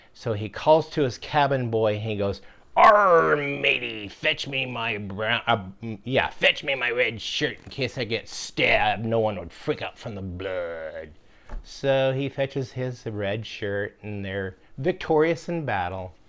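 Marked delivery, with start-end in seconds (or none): 2.7-11.1 put-on pirate voice. Telling a joke, voicing a pirate calling to his cabin boy: pirate voice. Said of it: "this pirate, he was sailing the seven seas".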